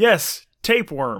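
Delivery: full-volume, loud, high yell. Retelling playing a game on the train: imitating own yelling. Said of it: "not a pleasant thing to yell".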